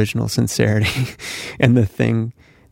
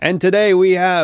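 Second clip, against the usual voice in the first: shouty, pitched-up, far-from-mic broadcast announcer voice; 8 semitones higher than usual. Explaining how broadcasters mic from afar, doing a shouty BBC announcer voice. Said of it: "they're much more shouty".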